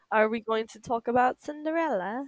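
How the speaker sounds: casual, put-on British accent. Asking the other host whether they will discuss cinderella, in a british accent. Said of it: "I don't know why I did a British accent".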